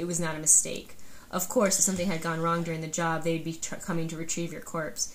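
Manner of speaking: ordinary talk, nothing marked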